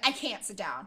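put-on panicked, freaking-out outburst. Retelling a confrontation where she was freaking out: imitating someone freaking out. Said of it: "she's freaking out".

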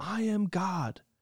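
mock, high-pitched screamed delivery. Retelling a teen at a funeral mass, into the microphone: imitating a scream. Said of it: "he just screams into the microphone".

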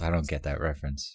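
soft half-whisper under the breath. Retelling how someone half-whispered to herself: imitating Aaron half-whispering. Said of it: "whispers to herself".

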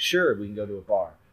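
normal talking voice

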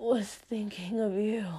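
choked, strangled words forced out with effort. Reading a story, one character chokes out a reply to another. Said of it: "he choked out".

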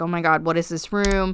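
ordinary delivery

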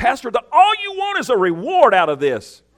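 high, shrill, loud, booming, swooping accusatory tone. A pastor shows his audience how to accuse him: mock accusing tone. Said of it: "say it like you really mean it".

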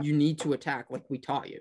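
plain

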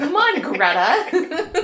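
high, loud, slow, drawn-out laughing yell.

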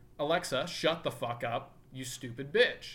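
plain

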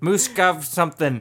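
put-on Australian accent. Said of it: "it's gonna go Australian".

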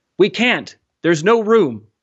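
high, loud, drawn-out yell. A man inside a dinghy answers someone begging to be let in, yelled. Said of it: "a man inside the dinghy yelled".

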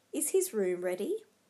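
plain reading voice

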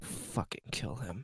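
very quiet muttering whisper under the breath. Voicing a character who hears of a threat: whispering under his breath. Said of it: "Galen whispers under his breath".

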